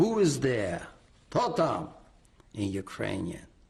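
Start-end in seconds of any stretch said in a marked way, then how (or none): 0.0-1.9 big, heavy bombastic voice with swooping pitch. Recounting knocking on a door, voicing the man inside: retelling a heavy, bombastic yell. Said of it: "he had a very heavy, bombastic voice. ... he yelled out".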